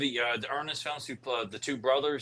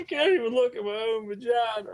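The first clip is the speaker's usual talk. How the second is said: very high, crying with laughter through words; 10 semitones higher than usual. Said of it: "I'm crying when I'm saying this".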